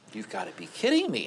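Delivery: aghast, horrified disbelief, high and sweeping.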